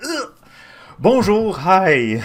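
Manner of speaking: super high-pitched, loud, swooping voice. Imitating own usual stream greeting: imitating own high-pitched greeting. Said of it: "that super high pitch".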